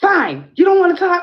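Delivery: full-volume, very high, shrill screaming. Recounting a man who followed the speaker home, retelling a man screaming. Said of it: "and then he screams".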